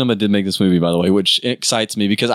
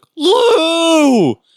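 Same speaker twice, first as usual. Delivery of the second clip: put-on very high, long, drawn-out villain scream; 5 dB louder than usual. Retelling a movie fight, the villain calls out a name: imitating Shang Tsung screaming. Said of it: "screaming out for Liu".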